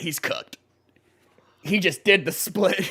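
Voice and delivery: laughing mid-sentence while talking. Reacting to a guy who just got annihilated, laughing while talking. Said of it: "I'm sorry I'm laughing".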